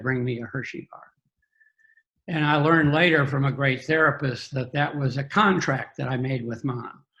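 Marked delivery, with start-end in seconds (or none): 0.0-1.0 words pushed out between sobs, through tears. Retelling a childhood plea to mother at the car window: retelling words said through tears. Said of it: "through my tears".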